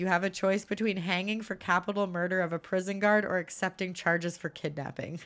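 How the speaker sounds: ordinary talk, nothing marked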